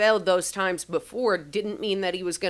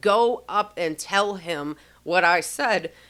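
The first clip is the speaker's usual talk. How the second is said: mock firm, stern, no-nonsense delivery, slow. Retelling a voice pressing a third time to deliver a message: imitating a stern command. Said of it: "he said it so sternly".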